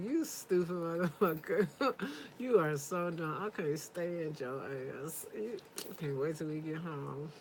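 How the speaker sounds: sweet, sugary, soft-spoken tone. Showing how to insult him in public without yelling, smiling through insults. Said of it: "And I'm smiling through it like".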